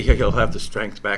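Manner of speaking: ordinary delivery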